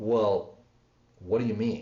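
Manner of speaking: low, near-accusing, accusatory tone. Teaching how tone shapes questions, showing the wrong way in an accusatory tone. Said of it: "that comes across almost accusatory".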